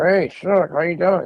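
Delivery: slow, high voice squeezed through clenched teeth. Describing how a man used to talk, imitating talking through his teeth. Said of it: "Like through his teeth".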